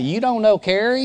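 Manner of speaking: put-on quick North Carolina accent. Retelling a moment at a round table, quoting a man seated there: Rusty's North Carolina accent. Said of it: "Rusty says in his North Carolina accent".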